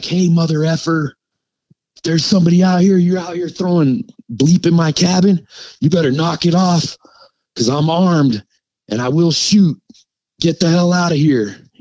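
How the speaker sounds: play-acted, high hollering yell. Retelling how a man with a lantern yelled out into the woods, retelling a yell. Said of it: "he just yells out into the woods like".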